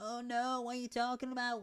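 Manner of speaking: shrill, very loud, pitched way up shouting voice. Retelling a line of the sidekick character Jeff: Jeff voice. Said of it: "Just me doing the voice".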